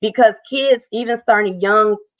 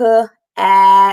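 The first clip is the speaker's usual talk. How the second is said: drawn-out, stretched sounds, louder; 5 dB louder than usual. Showing the stretching technique for a word: stretched-out sounds. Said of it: "Stretch it out like a snake".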